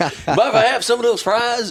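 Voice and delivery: very high comedy-sketch president voice, casual. Retelling a comedy skit where Bill Clinton jogs into McDonald's: imitating Phil Hartman's Bill Clinton. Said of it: "And he's playing, you know, Bill Clinton".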